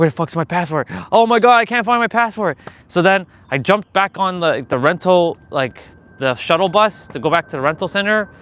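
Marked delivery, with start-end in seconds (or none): 0.0-2.6 put-on, high, rising, frantic, panicked rant. Retelling losing a passport at the airport: retelling own panic. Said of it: "I was freaking out".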